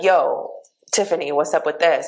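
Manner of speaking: normal talking voice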